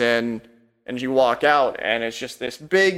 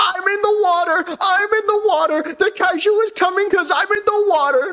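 squeaky-high, totally hyped, super pumped delivery; 4 dB louder than usual. Narrating a scene, voicing a criminal the listeners pass in a hallway, super pumped. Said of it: "And he's like super pumped".

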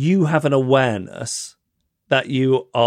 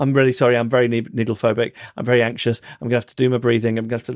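put-on self-effacing, humble tone. Retelling own apology before a needle procedure: imitating own self-effacing apology. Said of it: "in a self-effacing way".

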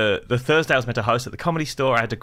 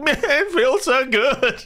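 very high, drawn-out, teary sobbing speech; 13 semitones higher than usual. Retelling a physio session and quoting their past self, imitating own crying. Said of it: "And I'm like crying".

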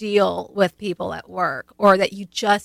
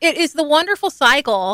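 dripping mock-cheerful sarcasm, swooping and pitched up; 8 semitones higher, 4 dB louder than usual. Describing the curse of the competent to another speaker: sarcastic. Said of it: "I'm being sarcastic".

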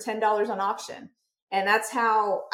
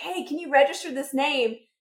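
mock calling out, high-pitched; 5 semitones higher, 4 dB quieter than usual. Retelling calling out to her husband to register a blog name, re-enacted yell. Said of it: "I yelled it out to him".

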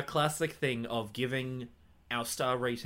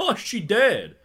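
very loud, very high, shrill blurted outburst; 9 semitones higher, 12 dB louder than usual. Describing annoying kids, quoting one of them during a death, retelling a loud outburst. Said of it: "one of them loudly was like".

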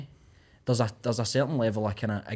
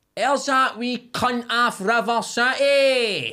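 very high, very slow, loud yell with "city" stretched; 13 semitones higher, 7 dB louder than usual. Retelling how a woman outside a pub yelled at the speaker: imitating a woman yelling. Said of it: "loud as fuck".

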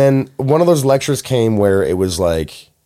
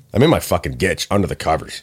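normal talking voice

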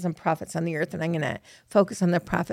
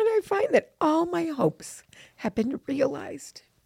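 tearful, close to crying, voice pitched up; 9 semitones higher than usual. Speaker telling how missionaries came after a prayer, on the verge of tears. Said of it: "Sorry, I'm going to cry".

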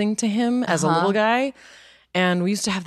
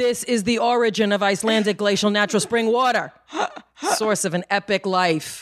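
put-on Bronx accent; 3 semitones higher than usual. Reading bottled water ad copy aloud in a bronx accent. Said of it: "do a Bronx accent with this Icelandic water".

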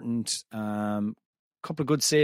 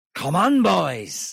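put-on raised, pitched-up, called-out Welsh accent; 7 semitones higher, 5 dB louder than usual. Asked by another speaker for an impression, a speaker tries a Michael Sheen Welsh accent. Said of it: "That's just a Welsh accent".

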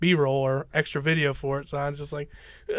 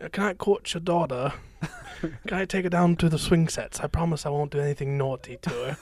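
put-on acted elderly English gentleman accent. Quoting a man from a show set in the Alaska bush, old Englishman voice. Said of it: "He sounds like an old Englishman".

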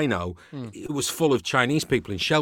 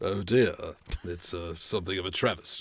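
deep voice pitched right down; 7 semitones lower, 5 dB quieter than usual. Redoing the casino moment after being asked for a Roger Moore voice. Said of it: "You should have done your Roger Moore voice".

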